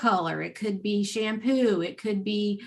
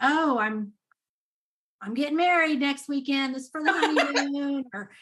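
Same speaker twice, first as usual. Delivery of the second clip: mock, put-on sarcastic tone; 5 semitones higher than usual. Speaker quotes how she answered people at checkout: mock-sarcastic retelling. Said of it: "she would just be so sarcastic".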